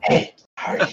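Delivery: creepy whispering. Demonstrating how to whisper carelessly in someone's ear, creepy whisper. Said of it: "that's not creepy at all".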